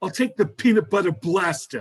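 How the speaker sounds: put-on heavy, laid-on New York accent. Retelling Rosie O'Donnell ordering a flavor: Rosie O'Donnell New York accent. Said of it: "her accent was so New York".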